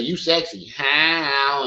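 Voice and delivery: flirtatious delivery, how drawn out. Imitating a man approaching a woman in a bar: imitating a man flirting. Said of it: "He say".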